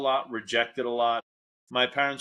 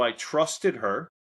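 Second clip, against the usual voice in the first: ordinary talk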